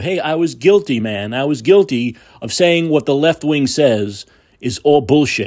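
ordinary talk

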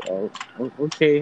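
halting, stumbling, confused, caught-off-guard voice. Retelling a traffic stop, own reply to the cop: imitating own confused reply. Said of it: "I was all confused".

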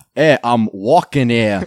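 put-on Boston accent. Taking a turn after others urge someone to try it, in a Boston accent.

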